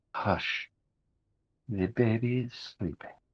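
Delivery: quiet, soft, hushed voice. Game narrator voices a woman stepping into the room, in a quiet voice. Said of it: "in a quiet voice".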